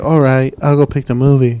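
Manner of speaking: put-on woman's voice. Retelling what she said about picking the movie: imitating her voice. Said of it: "Is that how she sounds?".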